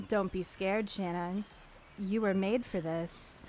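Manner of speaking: soft, eerie, spooky voice. Narrating a second-person story, voicing the ocean that speaks to shannon: spooky ocean voice. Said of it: "the spooky ocean voice says".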